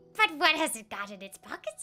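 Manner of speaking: put-on attempt at a creature voice. Quoting a riddle line, unsure if it sounds right: attempted Gollum voice. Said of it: "Now I don't know if that's a Gollum voice".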